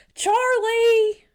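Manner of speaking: put-on yell. Speaker recalling a woman calling for Charlie, retelling a yell. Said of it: "I thought she was yelling at me".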